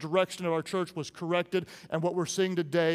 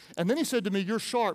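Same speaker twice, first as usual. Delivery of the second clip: ordinary talk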